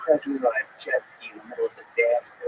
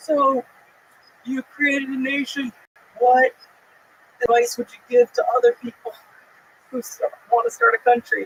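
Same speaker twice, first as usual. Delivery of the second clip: mock raised, yelled, shouted close and loud; 11 semitones higher, 4 dB louder than usual. Retelling a question to a president over loud boats: imitating own yelling. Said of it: "yelling it in this dude's ear".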